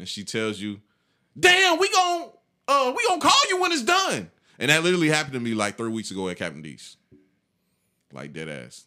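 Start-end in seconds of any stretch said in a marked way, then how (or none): 1.4-4.3 mock snippy, high-pitched, rude voice full of attitude. Retelling a counter worker answering a customer asking about an order, mock rude attitude. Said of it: "She's just giving you like horrible attitude".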